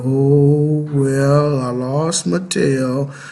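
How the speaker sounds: very slow gloomy mope with drawn-out oh. Acting out a chat where someone greets Eeyore, Eeyore voice, gloomy and mopey. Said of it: "how you doing today, Eeyore?".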